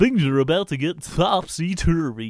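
movie trailer narrator voice. Imitating a rom-com film trailer: rom-com film trailer voice. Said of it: "Except for I'm doing the rom-com".

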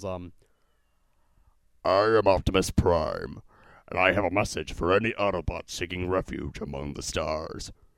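acted robotic voice. Recalling the impression that freaked her out: Optimus Prime voice. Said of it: "I did this one impression of ... Optimus Prime".

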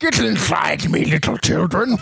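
put-on rough, creaky, rasping voice like old stone. Joking about being the Hogwarts castle: Hogwarts voice. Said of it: "the warts of Hogs would have that voice".

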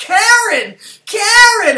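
high, loud, anguished scream. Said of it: "she's just starts screaming".

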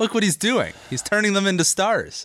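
sarcastic fake praise. Pretending to defend the coach to another speaker: sarcastic mock praise. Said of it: "that sarcasm there".

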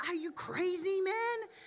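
acted high-pitched female yell. Retelling a widow shouting at a prophet: imitating a woman yelling. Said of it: "she's yelling".

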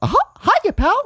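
voice pitched very high and loud. Podcast cohosts trying Disney voices, starting the bit in a Mickey Mouse voice. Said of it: "And the Mickey has to start".

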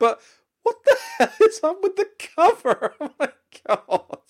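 laughing outburst, very high-pitched. Reviewing a card game, the speaker reacts to its cover: laughing uncontrollably. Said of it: "I can't stop laughing".

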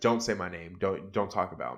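put-on agitated snap. Retelling a cab story, acting out a latecomer's reply: retelling an agitated snap. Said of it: "calm down".

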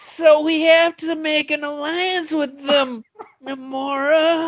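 high, loud, simpering, gushing voice. Discussing a scene, the speaker acts out a line in a simp Namor voice. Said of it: "It's Namor if he was a simp".

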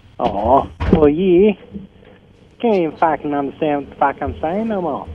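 put-on Australian accent. Asked where your australian accent is, answer in a put-on australian accent. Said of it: "Where's your Australian accent, mate?".

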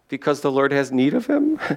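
tentative, wondering, hesitant, unsure tone. Acting out how they might have said the line, mock-unsure hesitant question. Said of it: "like wondering, is this going to work if we say it like this?".

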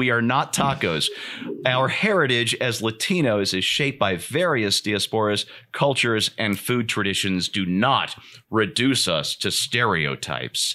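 ordinary talk

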